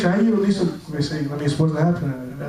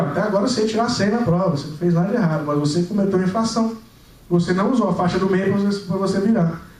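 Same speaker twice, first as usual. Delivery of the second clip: plain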